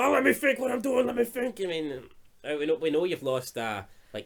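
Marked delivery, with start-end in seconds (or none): 0.0-1.6 acted harsh, rough, high-pitched, frustrated angry scream. Retelling how a film character turned and answered someone: imitating someone screaming. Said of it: "turned around and screamed at him".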